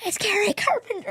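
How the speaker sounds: acted, very high-pitched hollered yell. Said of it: "'cause I just yelled".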